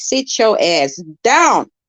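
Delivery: slow, stern, no-nonsense mom voice. Talking about her kids in their room, showing the mama voice they'll hear. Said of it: "put up on my motherfucking mama voice".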